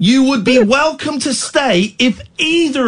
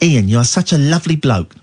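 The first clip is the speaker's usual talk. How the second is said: very low, deep put-on voice; 10 semitones lower than usual. Paying a compliment in the addressed person's own voice, Ian impression. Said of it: "I'll do it in your voice".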